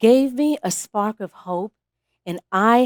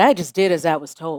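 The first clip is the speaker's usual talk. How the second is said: ordinary talk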